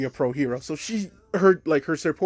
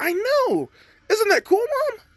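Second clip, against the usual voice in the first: very high squeak, voice cracking mid-line; 3 dB louder than usual. Speaker recapping a scene where a son answers his mom, voice cracking. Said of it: "my voice cracked".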